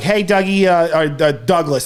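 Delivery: strong put-on New York accent, slow. Imitating his parents calling him by name, imitating their strong New York accent. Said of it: "they have the strong New York accents".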